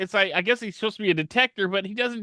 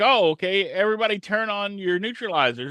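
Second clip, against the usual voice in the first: ordinary delivery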